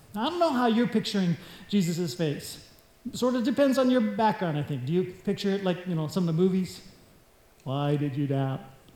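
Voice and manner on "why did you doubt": deadpan, flat delivery with no feeling. Showing how some movies picture Jesus asking the question: flat, emotionless delivery. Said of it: "give him some emotion".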